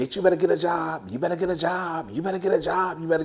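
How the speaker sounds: put-on, high, nagging scream kept mild, repeated. Retelling how commenters react to a divorce: imitating people screaming. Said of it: "start screaming".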